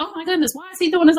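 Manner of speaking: high, panicked freaking out.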